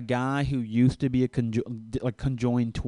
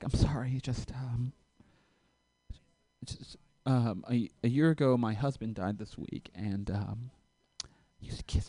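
put-on weepy, soft, hushed voice through tears; 7 dB quieter than usual. Speaker retells a woman's answer after he asked if she was okay: imitating her crying. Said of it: "Just starts crying".

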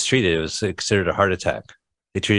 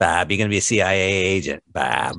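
put-on drawling voice. Quoting a man recruiting bob into the cia, imitating his drawl. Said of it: "He has this great like draw".

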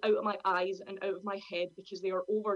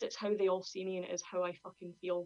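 plain

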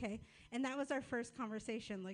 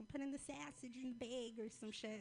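put-on Minnesota accent, quieter; 6 dB quieter than usual. Speaker retelling their sister cooking at Thanksgiving, imitating sister's Minnesota accent. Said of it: "this great Minnesota accent".

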